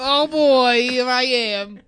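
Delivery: high, loud, cruel mocking put-on voice. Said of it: "this is just a cruel impression".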